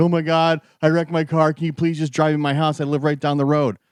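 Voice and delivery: mock tearful, bawling, sobbing, pleading tone. Retelling a woman who wrecked her car asking for a ride: imitating someone bawling. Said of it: "She's bawling, crying".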